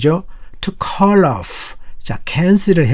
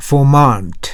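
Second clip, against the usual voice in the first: Vermont with stress on second syllable -mont. English vocabulary lesson in korean, modelling the word: stress on mont in vermont. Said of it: "T에 강세가 있어요".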